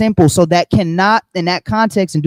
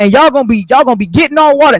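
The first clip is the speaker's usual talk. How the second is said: put-on voice, higher and louder; 6 semitones higher, 4 dB louder than usual.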